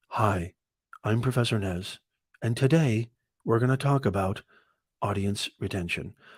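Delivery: dull, lifeless, boring flat lecture-like drone. Demonstrating a dull one-angle video presenter: boring monotone. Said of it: "one angle, monotone?".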